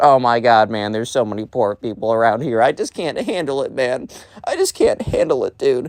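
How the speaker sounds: mock bratty, whiny, put-upon complaining. Imitating a spoiled cousin complaining on a trip: imitating someone complaining. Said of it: "just complaining about".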